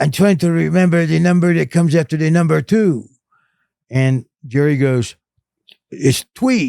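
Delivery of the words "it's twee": put-on voice with a slight speech impairment. Retelling Jerry answering Dad in the car, imitating Jerry's speech impairment. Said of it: "that little bit of speech impairment".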